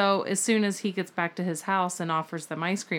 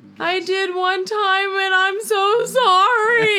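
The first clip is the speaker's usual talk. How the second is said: play-acted shrill, very loud, tearful blubbering child wail; 13 semitones higher, 11 dB louder than usual. Retelling a child confessing to once saying a bad word: imitating a crying child. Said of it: "she's just crying and blubbering".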